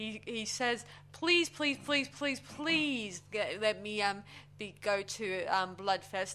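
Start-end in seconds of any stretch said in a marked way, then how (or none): 1.1-6.4 mock, acted-out pleading, begging. Retelling how a store employee begged in front of his friends, retelling a plea. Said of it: "He begs".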